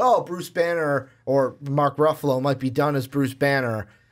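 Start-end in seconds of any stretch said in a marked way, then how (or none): none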